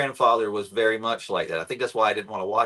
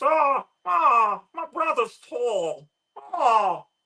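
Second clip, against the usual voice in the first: very high, slow, drawn-out crying whine; 13 semitones higher than usual. Imitating Raymond from Everybody Loves Raymond: Raymond impression. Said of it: "You do a good Raymond".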